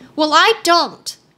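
declaratory delivery. The girl answering the one who says she might be worse off, declared. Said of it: "declared the girl".

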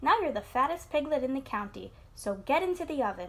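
usual speaking voice

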